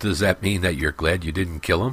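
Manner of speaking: laughing while speaking. Narrator reads one companion's question to another, laughing. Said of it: "laughed Layman".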